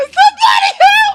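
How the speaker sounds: mock panicked screaming. Imagining being stuck dangling in wind: pretend panicked scream for help. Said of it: "I'm screaming like a".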